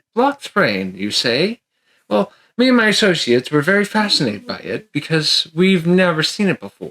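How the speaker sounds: courteous, polite, curious medieval gentleman voice. Playing a medieval character shown an umbrella, politely asking. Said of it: "he just politely asks".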